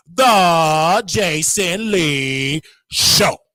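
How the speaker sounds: very slow, deliberate, drawn out word by word. Naming a show he knows: said slowly. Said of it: "I'm going to say it slowly".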